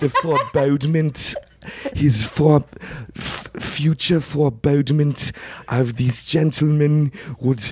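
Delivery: so-so high-pitched put-on voice, halting and stumbling on words. Doing an impression for the others after being asked to repeat it: Werner Herzog impression. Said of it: "not even that good of an impression".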